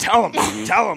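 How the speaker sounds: very high-pitched muttering under the breath. Watching a fight beside Steph's mom, speaker imitates Brenda under her breath. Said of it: "I hear Brenda under her breath".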